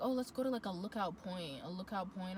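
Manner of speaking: normal talking voice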